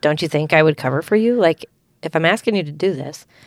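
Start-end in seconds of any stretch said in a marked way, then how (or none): none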